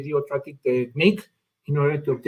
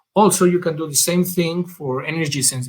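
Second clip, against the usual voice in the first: normal talking voice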